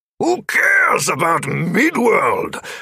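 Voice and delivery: furious, high, bellowed shout. Narrating a story, a character loses control of his emotions: bellowing. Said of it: "Oberon had bellowed".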